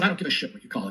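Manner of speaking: plain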